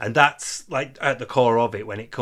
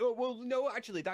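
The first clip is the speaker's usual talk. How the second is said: mocking voice, higher and quieter; 13 semitones higher, 11 dB quieter than usual. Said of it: "He's like".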